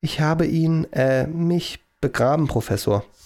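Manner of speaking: meek, subdued, slow, sheepish delivery. George enters the lab, expecting another outburst from the professor: sheepish. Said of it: "meinte er kleinlaut".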